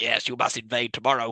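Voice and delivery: low-pitched, evil villain voice. Speaker retells a Thundercats scene where the villain talks to Scythe: Mumm-Ra's mock-evil villain voice. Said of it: "And he's being all evil".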